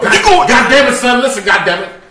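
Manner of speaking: loud, very high, belted delivery. Imitating a pep talk to a friend about a role: Denzel Washington voice. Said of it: "Denzel gonna give you that pep talk".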